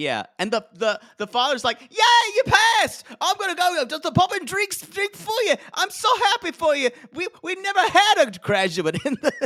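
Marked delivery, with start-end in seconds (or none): 1.8-9.3 very high, loud, bad Welsh accent. Retelling the father's reaction to the result, in an attempted welsh accent. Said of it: "I can't do a Welsh accent".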